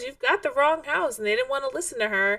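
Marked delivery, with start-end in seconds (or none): 0.0-1.2 mock, insistent, high-pitched screaming. Retelling how a woman told police they had the wrong house: imitating someone screaming. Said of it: "she's screaming at them".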